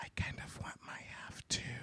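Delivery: very hushed, soft, breathy whisper. Retelling a character quietly asking for her share: imitating a whisper. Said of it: "she whispers to him".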